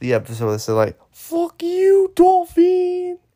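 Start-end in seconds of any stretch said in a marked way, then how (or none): 1.1-3.2 put-on Japanese accent, pitch way up, loud. Quoting a line from a South Park episode: imitating a South Park Japanese accent. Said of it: "I'm probably gonna get canceled for this accent".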